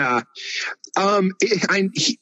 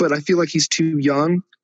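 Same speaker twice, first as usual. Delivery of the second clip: ordinary talk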